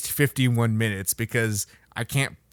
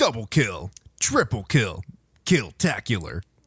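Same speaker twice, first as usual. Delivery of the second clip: put-on game announcer voice. Recalling how they sounded on a recording, doing the Halo announcer voice. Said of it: "I did like the the Halo announcer voice".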